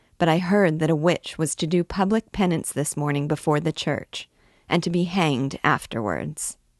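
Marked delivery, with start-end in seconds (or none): none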